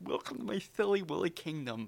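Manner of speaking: goofy put-on silly voice, high and loud. Explaining that anyone can do a funny voice, giving an example in a funny voice. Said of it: "anyone can do a funny voice".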